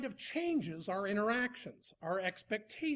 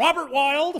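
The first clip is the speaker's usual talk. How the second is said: stern voice, very loud and high-pitched; 5 semitones higher, 12 dB louder than usual. Showing how a mom calls her child's full name, in the mom voice. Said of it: "That was the mom voice".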